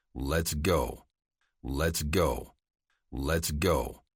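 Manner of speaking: hard, flat, level, low voice. Narrator reads Luke's line as he pulls out a Remington, hard, flat voice. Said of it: "said in a hard, flat voice".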